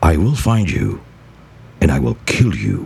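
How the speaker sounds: very deep, low put-on film actor voice. Asked to mimic actors: Liam Neeson impression. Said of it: "You can mimic actors, actors with like Neeson, Liam Neeson. I can do that here".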